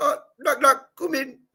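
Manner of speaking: very high, loud put-on Indian accent. Recalling an old knock knock joke that Robin Williams told, use a put-on Indian accent. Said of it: "with that with that uh, accent".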